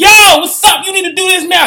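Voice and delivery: very high, very loud, impulsive, pushy voice. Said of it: "Your ego is very impulsive".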